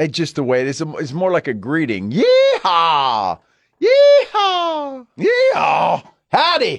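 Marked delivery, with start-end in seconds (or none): 2.1-6.8 very high, squeaky, slow, swooping cowboy voice. Explaining the cowpoke's greeting to the other speaker, high-pitched cowboy voice. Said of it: "why does the cowpoke have to have a higher voice".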